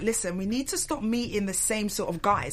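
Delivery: ordinary talk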